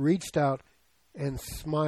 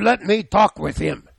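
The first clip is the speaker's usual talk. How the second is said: put-on very loud, high, gravelly Russian accent; 6 semitones higher, 11 dB louder than usual. Retelling a family phone call, quoting Aunt Lizzie in her gravelly Russian accent. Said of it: "gravelly voice, Russian accent".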